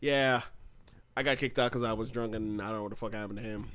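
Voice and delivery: ordinary talk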